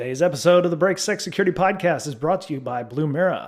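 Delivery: radio announcer voice. Reading a podcast sponsor message: announcer voice. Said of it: "let me get my announcer voice on".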